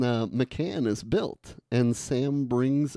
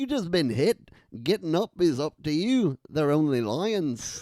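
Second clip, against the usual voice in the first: put-on Irish accent, put on; 3 semitones higher than usual. Quoting the words said to a character ready to quit, Irish accent. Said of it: "this is the Irish accent".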